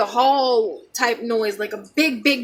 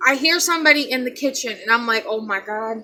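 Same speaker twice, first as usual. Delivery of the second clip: normal talking voice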